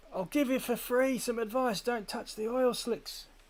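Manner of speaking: very high, little impish creature voice. Narrating a voice heard from behind while crossing a swampy delta; little imp voice. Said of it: "little imp".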